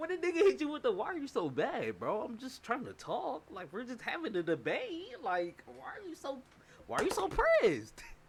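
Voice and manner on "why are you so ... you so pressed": put-on laughing, mocking tone, higher. Imitating a debate opponent taunting someone who yells: imitating a laughing, mocking taunt. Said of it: "start laughing at your ass".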